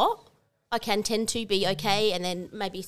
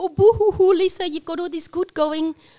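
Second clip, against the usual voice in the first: mock sobbing, higher and louder; 10 semitones higher, 8 dB louder than usual. Retelling how the man in his office mocked her: imitating the man mocking her. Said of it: "he's like".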